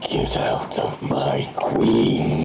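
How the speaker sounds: deep, low-pitched voice. Game master voices a presence reaching into a player's mind: deep telepathic voice. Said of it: "You hear a deep voice not coming from the creature".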